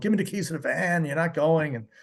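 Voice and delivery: insistent, bossy yelling. Retelling a tense studio session, imitating someone yelling. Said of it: "He was just yelling".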